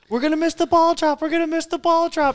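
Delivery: play-acted squealing, very high screaming cry. Speaker retells his wife and the girls while hanging out watching football, imitating girls screaming. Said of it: "start screaming like".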